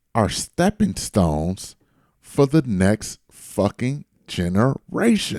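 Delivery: slowed-down repetition. Asked by the other speaker to say it again slower: slower repetition. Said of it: "but say it slower?".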